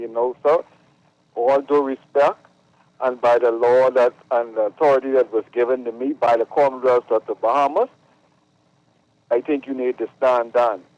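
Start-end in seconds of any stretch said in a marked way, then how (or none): none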